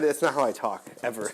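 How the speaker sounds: ordinary talk, nothing marked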